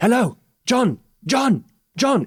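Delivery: frantic, desperate calling out, pitched very high. Telling a story about a voice behind the door calling a name, desperate calling. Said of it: "It's desperate".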